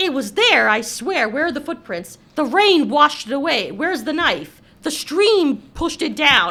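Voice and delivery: forceful, loud insistence.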